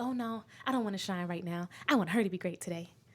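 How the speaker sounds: put-on TV announcer-style narrator voice. Retelling own past thoughts about dimming for a friend: Disney Channel narrator voice. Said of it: "literally in that voice".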